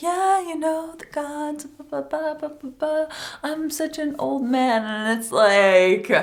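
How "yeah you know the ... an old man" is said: fake-nice tone with raised pitch. Mocking a character who is pretending to be nice: imitating the High Sparrow pretending to be nice. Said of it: "pretending to be nice".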